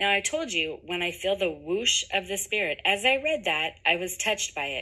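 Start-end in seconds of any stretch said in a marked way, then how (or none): none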